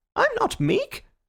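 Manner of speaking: thin, very high-pitched, squeaky voice. In a sudden silence after applause, a man answers the speaker in a high, squeaky voice. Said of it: "in a high, squeaky voice".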